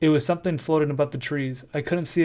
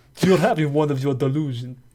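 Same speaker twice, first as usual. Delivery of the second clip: put-on New York accent; 4 dB louder than usual. Acting out a husband's dismissive line in a New York accent. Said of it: "is that more New York?".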